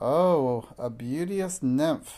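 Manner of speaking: slow, croaking, sarcastic, mocking witch voice. Narrator reading the line of a woman gathering poisonous herbs, croaking sarcastically. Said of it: "she croaked sarcastically".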